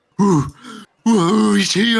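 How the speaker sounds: shrill, very high, very loud monster cry. Voicing a bugbear calling out in a fight: bugbear crying out loud. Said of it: "crying out loud".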